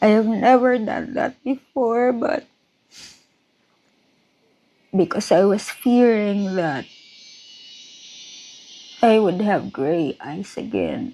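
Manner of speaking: crying, tearful speech. Recalling praying for healing during an illness, the speaker is crying while speaking. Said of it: "Sorry for crying again".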